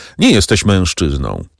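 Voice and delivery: ordinary delivery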